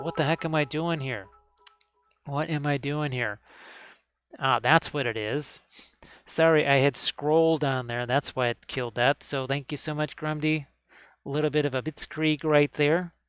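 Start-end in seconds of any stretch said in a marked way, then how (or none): 0.0-3.4 scared, frightened fire elemental voice. Voicing a fire elemental hanging out over the water: scared fire elemental voice. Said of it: "he's actually really scared".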